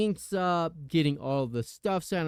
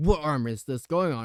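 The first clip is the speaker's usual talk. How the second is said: really, really angry delivery. Retelling how the tattoo artist asked a question: imitating an angry man. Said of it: "really, really angrily".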